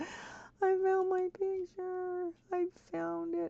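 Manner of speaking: very high-pitched voice, on the verge of tears. Telling the guys they finally found a lost picture, on the verge of tears. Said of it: "I'm about to cry".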